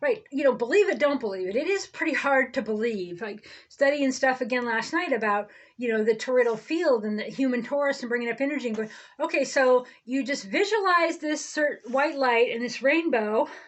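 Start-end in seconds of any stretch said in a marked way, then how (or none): none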